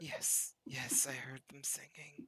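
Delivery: very quiet, whispered muttering under the breath. A man left dangling in the pipes answers the group, under his breath. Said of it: "He just is like under his breath".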